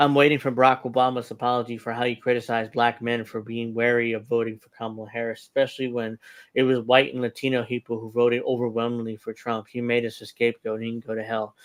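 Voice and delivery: ordinary delivery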